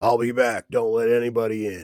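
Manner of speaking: very loud, rough, big booming voice. Telling the players what they hear, a character speaks in a big gruff voice. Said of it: "this this this real big gruff sounding voice".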